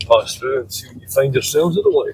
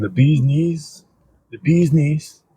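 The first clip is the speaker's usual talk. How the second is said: slow, drawn-out mock Italian accent. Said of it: "I can't do an Italian accent".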